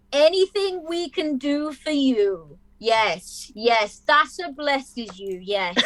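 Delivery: very slow, high, stretched-out, drawn-out speech. Voicing a character thanking a visitor: talking really slowly. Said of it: "He's doing that thing where he talks really slowly".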